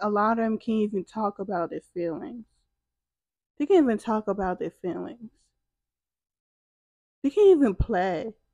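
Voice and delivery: holding back tears. Talking about grandmothers who need healing, holding back tears. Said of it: "I'm trying not to cry".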